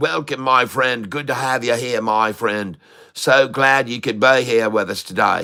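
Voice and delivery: Australian English accent. Livestream host welcoming a viewer from the uk, australian english accent. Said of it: "That's my Australian English accent".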